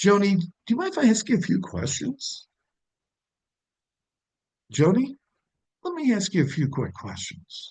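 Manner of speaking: fair-minded, reasonable tone. Showing how to mix up tone when questioning joni: reasonable-person tone. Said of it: "lead with reasonable person".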